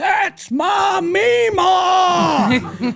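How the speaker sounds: very high, slow, drawn-out shout. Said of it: "she just kept shouting".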